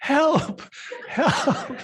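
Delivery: playful, high, loud mock yell.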